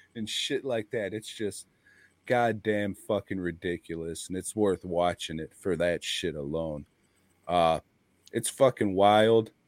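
ordinary delivery

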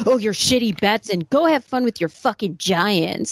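put-on venomous, aggressive tone. Retelling Ralph's opening jab at Artie: imitating Ralph's venomous tone. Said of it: "started this with this venomous".

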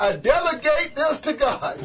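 put-on high, slow small-child voice, word mispronounced. Mispronouncing a dedication to God, in a little child voice. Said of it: "Let me sound like a little child that can't say it right".

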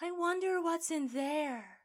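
high mysterious voice. Retelling a scene where Daniel looks at the room, doing his weird mysterious wonder voice. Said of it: "goes in this weird, mysterious wonder voice".

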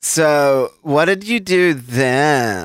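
put-on very slow valley girl drawl, upspeak and vocal fry. Describing an awful recording, quoting a woman in Valley Girl upspeak with vocal fry. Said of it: "Valley Girl talk and vocal fry and upspeak".

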